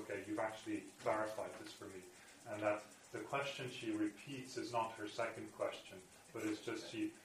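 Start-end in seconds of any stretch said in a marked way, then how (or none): none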